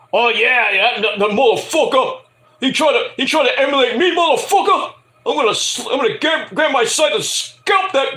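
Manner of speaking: aggressive, heated, high-pitched delivery. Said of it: "Jerome! You summoning me, motherfucker?".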